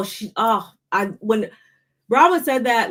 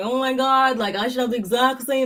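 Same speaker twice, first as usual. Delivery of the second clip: tearful, whimpering, whiny crying moan; 3 semitones higher than usual. Denying she complained about the room, putting on mock whiny crying. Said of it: "crying and whining and saying like".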